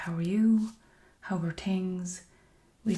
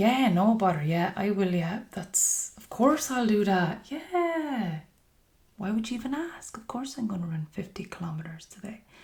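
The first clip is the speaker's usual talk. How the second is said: cheeky mock agreement, yeah stretched out, swooping pitch; 4 dB louder than usual. Acting out a reply to being asked to run fifty kilometers: sarcastic and cheeky. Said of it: "just us being, like, sarcastic and a little bit cheeky".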